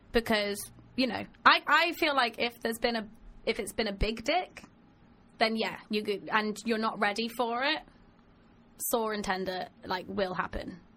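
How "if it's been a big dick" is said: normal talking voice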